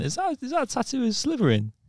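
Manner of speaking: put-on tipsy, high, boozy, blurted drunken voice. Retelling asking about a tattoo: imitating own drunken speech. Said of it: "I drunkenly went".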